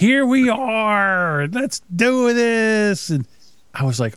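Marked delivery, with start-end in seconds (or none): 0.0-3.1 put-on very slow, plastered, drunken slurring. Retelling how Chad sounded plastered on his show: imitating drunk Chad slurring. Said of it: "he kept saying".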